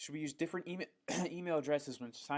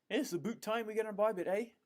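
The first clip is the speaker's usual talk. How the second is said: horrible put-on Canadian accent, pitched up; 8 semitones higher, 3 dB louder than usual. Joking about switching locations to Canada: horrible Canadian accent. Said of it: "It's a horrible accent".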